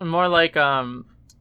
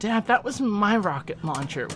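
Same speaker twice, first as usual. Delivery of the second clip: put-on teen boy voice, pitched high; 6 semitones higher than usual. Quoting a son's line to his dad from Indiana Jones and the Last Crusade, teenage-sounding voice. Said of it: "Why do I sound like a teen?".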